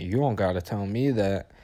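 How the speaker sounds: usual speaking voice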